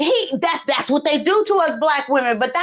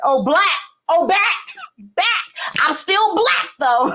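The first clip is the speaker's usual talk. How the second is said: bubbly, gushing, excited outburst of exclamations; 3 semitones higher than usual. Excited to be back with viewers, the speaker is yelling excitedly. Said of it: "I'm sorry I'm yelling".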